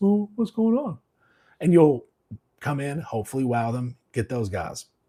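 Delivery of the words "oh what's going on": very high-pitched character voice. Talking about customers who drop into a new shop, the speaker imitates a shop hopper. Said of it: "they'll do that voice".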